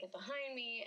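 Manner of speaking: ordinary delivery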